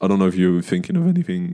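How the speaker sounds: voice cracking. Chatting with a co-host about the week, voice cracking. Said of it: "my voice cracked".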